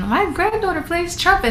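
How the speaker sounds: put-on high-pitched, proud, boastful grandma voice.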